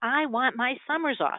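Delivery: acted, very worked-up tone. Retelling what she finally announced, imitating an agitated voice. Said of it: "in kind of a very agitated voice".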